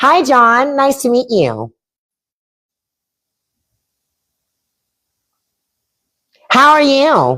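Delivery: very high, extra nasal voice. Retelling an interview room greeting: extra nasal work voice. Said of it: "You gotta put that little nasal in it".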